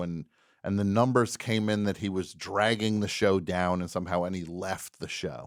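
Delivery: ordinary delivery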